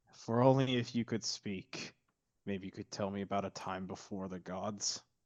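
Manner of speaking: quiet mumbling under the breath. Voicing a character walking away from a creature: muttering under his breath. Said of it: "he kind of mutters under his breath".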